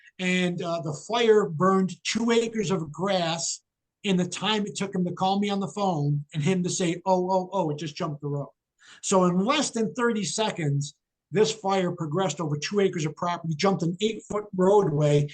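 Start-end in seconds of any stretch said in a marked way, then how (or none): none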